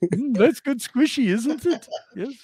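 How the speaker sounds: high-pitched, animated cartoon shopkeeper voice. Continuing a bit a listener thinks came from The Simpsons, Simpsons character impression. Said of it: "did you get that from the Sim- Simpsons?".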